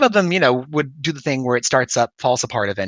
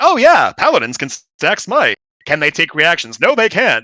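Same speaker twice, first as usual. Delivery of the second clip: video game menu narrator voice; 4 semitones higher, 3 dB louder than usual. Imitating a game menu reading rules aloud: game menu narrator voice. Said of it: "like when you're going through a menu in a game".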